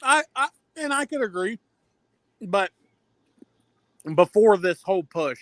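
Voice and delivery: chewing ice while speaking. Disagreeing about wrestlers' WrestleMania push, chewing ice while talking. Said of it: "sorry, I was chewing on ice".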